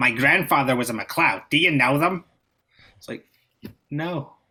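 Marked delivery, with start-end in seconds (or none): 0.0-2.2 put-on General American accent. Retelling what Americans say on meeting a Scot, in a put-on American accent. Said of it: "I'm going to do the American accent".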